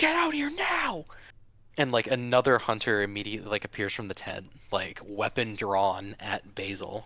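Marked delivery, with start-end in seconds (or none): 0.0-1.1 mock shrill, very high-pitched yelling. Narrating a hunter who yells an order at Basil's group, yelling. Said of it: "he yells like".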